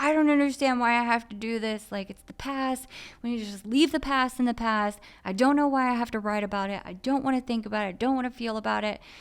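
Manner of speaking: high, exploding outburst, breaking down. Retelling their own outburst when pressed about unfinished writing, reenacting an exploding breakdown. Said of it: "I just kind of like broke down and exploded".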